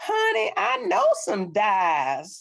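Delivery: thick, strong, sing-song rural country drawl. Quoting a little lady met while searching for an ancestor, strong country accent. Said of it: "comes up with a strong country accent and says".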